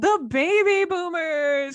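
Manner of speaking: high-pitched, slow, drawn-out game-show announcer voice.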